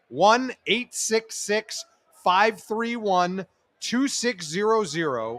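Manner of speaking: slow, deliberate, carefully spaced unhurried groups. Reading out a helpline phone number for listeners: saying it slowly. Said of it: "I'll say it slow".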